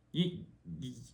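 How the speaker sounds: soft, high stutter, stuck on the word. Reading a story aloud and losing the words, stuttering. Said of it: "I'm stuttering, bro".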